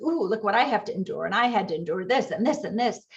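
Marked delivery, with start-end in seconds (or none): none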